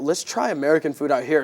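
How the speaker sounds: usual speaking voice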